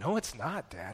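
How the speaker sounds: put-on very slow speech through tears. A father retells his son's reply after the hospital: imitating someone speaking through tears. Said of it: "through tears".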